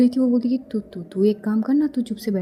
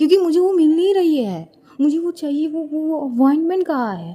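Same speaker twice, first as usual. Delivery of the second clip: put-on angry shout, higher; 5 semitones higher than usual. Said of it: "क्यों चिल्ला रहे हैं आप?".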